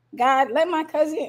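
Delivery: ordinary talk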